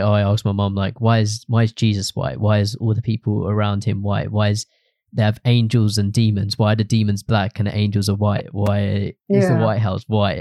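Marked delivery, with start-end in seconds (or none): none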